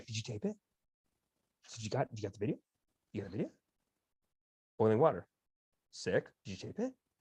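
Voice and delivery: hushed, rapid, eager muttering. Picturing a podcaster eager for video proof: imitating Joe Rogan, eager believer. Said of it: "I'm seeing Joe Rogan not so much as a skeptic".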